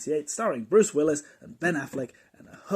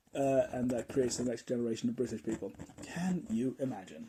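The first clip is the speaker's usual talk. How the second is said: normal talking voice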